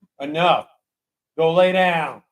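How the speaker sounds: mean, unkind tone of voice. Telling the dog to stop and lie down: mean voice. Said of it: "Daddy had the mean voice".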